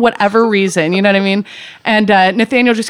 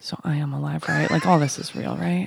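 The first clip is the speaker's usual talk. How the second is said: put-on quiet mutter, lower and quieter; 5 semitones lower, 12 dB quieter than usual. Retelling what he asked after coming down off shrooms: imitating someone muttering under his breath. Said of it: "sorta under his breath goes".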